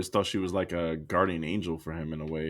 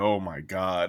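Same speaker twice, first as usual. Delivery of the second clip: weary, fed-up, annoyed, exasperated sigh, acted out. Retelling Zelda rolling her eyes at the hero: exasperated eye-roll. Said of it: "rolls her eyes, like".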